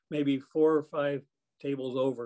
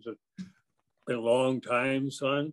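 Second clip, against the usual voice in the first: slow airline captain PA announcement voice. Retelling what an airline captain said to him: airline captain P A voice. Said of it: "that voice like they do over the P A systems".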